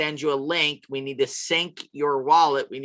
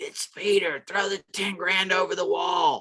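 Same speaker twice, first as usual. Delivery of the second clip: muffled voice, as if heard through a wall; 4 semitones higher than usual. Speaker acts out calling to a listener from behind a wall, muffled voice. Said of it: "you hear me in a muffled voice say".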